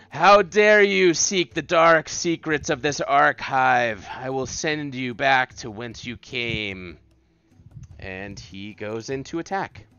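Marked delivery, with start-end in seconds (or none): 0.2-7.0 very loud, booming, huge stone-monster voice. A storyteller voices a threatening figure just before it attacks, in a booming voice. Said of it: "he speaks in like this booming voice".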